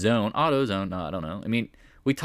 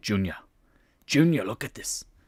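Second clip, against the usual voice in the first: put-on Scottish-accented voice, quieter; 2 semitones lower, 6 dB quieter than usual. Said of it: "that's not his voice, but it's kind of in that realm".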